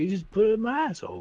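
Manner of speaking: very high, movie-style character voice. Quoting the Communion line about aliens again. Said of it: "He's like".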